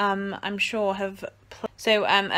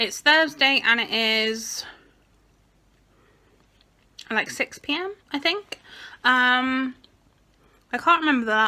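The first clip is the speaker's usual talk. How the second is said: words blurred, talking around a sucked mint; 4 semitones higher, 3 dB louder than usual. Vlogger starting a video while eating a mint, talking with mint in mouth. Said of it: "I have mint in my mouth".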